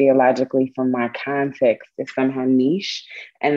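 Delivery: ordinary delivery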